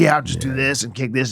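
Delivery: put-on aggravated tone. Retelling what Scott Hall said before a match: imitating Scott Hall sounding aggravated. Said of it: "he's, like, aggravated".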